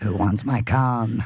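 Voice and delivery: high-pitched, full demonic possessed voice. Acting out a bit for callers: demonic voice like The Exorcist. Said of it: "you're so good at that voice".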